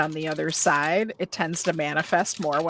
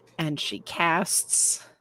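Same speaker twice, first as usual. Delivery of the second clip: ordinary talk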